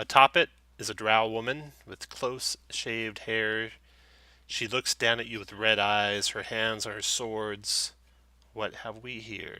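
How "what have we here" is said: soft, hushed woman's half-whisper. Game master voicing a drow woman as the party kicks the door in, half-whispering. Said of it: "she whispers".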